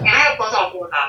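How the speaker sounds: "water" rattled off fast, rushed. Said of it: "in a quick way".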